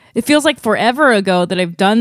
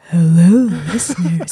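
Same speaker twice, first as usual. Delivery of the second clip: joking put-on ASMR voice, lower; 6 semitones lower than usual. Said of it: "I'm gonna try to do my voice A S M R".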